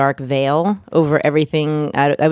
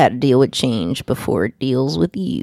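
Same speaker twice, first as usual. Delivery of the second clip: put-on Texas twang, low and swooping; 4 semitones lower than usual. Announcing the guest's new book title, in a Roscoe P. Coltrane Texas twang. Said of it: "I put like a Texas twang on".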